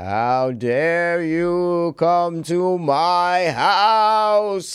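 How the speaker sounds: very slow, haunting, spooky ghost voice. Planning a Ouija board video, acting out a line in a ghost voice. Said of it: "I was doing a ghost voice".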